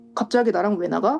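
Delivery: normal talking voice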